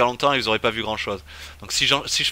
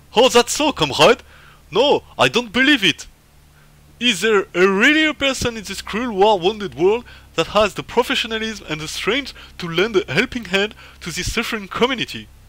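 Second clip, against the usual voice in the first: fake, bad Russian accent, very high and loud; 10 semitones higher, 5 dB louder than usual. Voicing a character who reacts to a player fixing something; bad Russian accent. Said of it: "C'est pas du tout l'accent russe que je fais".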